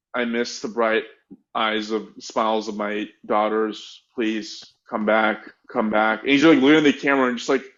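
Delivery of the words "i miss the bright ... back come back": mock flat, emotionless delivery, slower. Retelling a man's poorly acted plea on camera, imitating his deadpan tone. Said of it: "he says it in this tone that is so deadpan".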